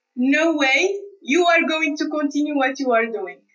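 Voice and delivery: ordinary talk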